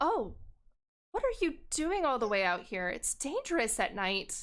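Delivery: soft, gentle tone of voice. Voicing a stranger who speaks to a lost player: softer tone. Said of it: "takes a softer tone".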